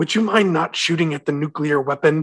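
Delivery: completely calm, cool, unruffled, matter-of-fact tone. Retelling a movie line while imitating John Travolta, said calmly. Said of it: "he just says it so calmly".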